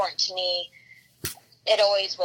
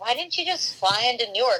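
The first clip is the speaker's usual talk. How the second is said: ordinary delivery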